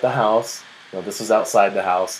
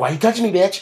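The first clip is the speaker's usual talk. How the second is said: mock hostile tone, pitched very high; 11 semitones higher, 3 dB louder than usual. Retelling a confrontation with a nearby stranger: imitating a hostile glare retort. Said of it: "I'm giving her this dirty glare".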